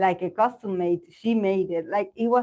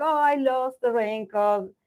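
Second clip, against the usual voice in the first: put-on high, upset little kid voice near tears; 5 semitones higher than usual. Retelling coming home to her mom after losing the raincoat, imitating her childhood crying.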